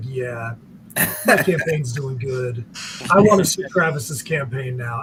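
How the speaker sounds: smoothest silky, easy delivery. Imitating another player's smooth voice: imitating a silky smooth voice. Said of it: "the silky smoothest voice when he's on".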